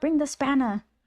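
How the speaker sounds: high, insistent, repeated calling out. Recounting a locked-in man who kept yelling at the speaker, retelling a yell. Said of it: "he kept yelling at me".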